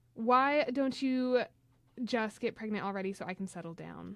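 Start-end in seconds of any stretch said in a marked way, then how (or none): none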